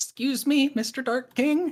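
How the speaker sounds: put-on high, reedy child voice. Gigaflop goes over to the super Dark King: reedy little kid Gigaflop voice. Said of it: "kind of reedy little kid voice".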